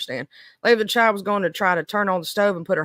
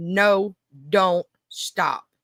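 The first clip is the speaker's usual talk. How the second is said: stern, unbending, very firm, no-nonsense tone. Explaining how to stop a four-year-old, demonstrating a very firm voice. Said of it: "in a very firm voice".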